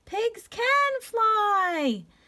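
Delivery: very high-pitched shout with "fly" drawn out. Reading the pig's line as he leaps out of the branches, shouting. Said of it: "shouted Ping Pong as he leaped out of the branches".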